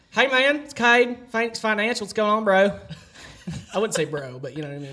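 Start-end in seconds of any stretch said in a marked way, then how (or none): 0.2-2.8 put-on Southern accent, casual, raised. Demonstrating his work phone greeting, in a Southern accent. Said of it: "I don't know if I have a good Southern accent".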